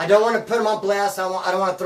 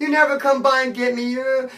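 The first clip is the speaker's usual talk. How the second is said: mock tearful crying, high and sobbing; 6 semitones higher than usual. Retelling a friend crying to another friend: imitating someone crying. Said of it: "Daniel is sitting there crying to Casey".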